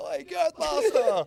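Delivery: shrill, high, full-volume shout. Retelling lads at a cafe calling out across the street: imitating a shout. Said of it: "English lads at this cafe shout out".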